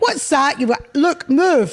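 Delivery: loud, high, strict teacher shout. A teacher recalls shouting at the kids, acting out the shouting teacher voice. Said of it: "You suddenly have a sort of teacher voice".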